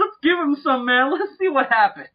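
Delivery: very high, earnest, sincerely joyful exclamation. Imitating a man in a movie offering a drink: imitating a man's sincere joyful voice. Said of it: "the sincerity and the joy in that man's voice".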